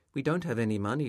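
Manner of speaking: plain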